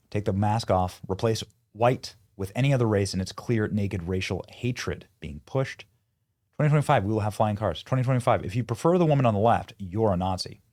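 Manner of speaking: usual speaking voice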